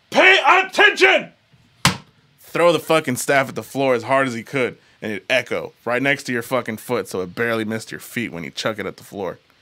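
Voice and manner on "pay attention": very loud, very high-pitched barking yell. Retelling how the karate teacher reacted to mistakes: imitating the teacher yelling. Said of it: "I'm gonna put the mic a little away".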